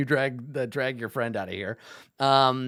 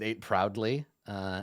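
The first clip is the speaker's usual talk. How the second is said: normal talking voice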